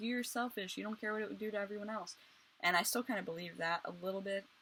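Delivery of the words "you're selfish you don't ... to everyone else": heated, angry and accusing reproachful tone. Retelling a friend's words during a huge fight: imitating a friend's angry accusation. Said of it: "a huge fight".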